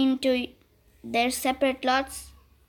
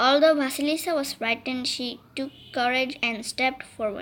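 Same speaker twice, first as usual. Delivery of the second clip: ordinary delivery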